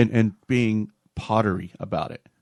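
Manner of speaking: ordinary delivery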